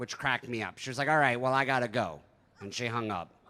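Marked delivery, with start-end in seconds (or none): 1.1-2.2 mock-annoyed tone, louder. Retelling a phone call where the other woman got annoyed and hung up, imitating someone annoyed. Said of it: "then she got annoyed".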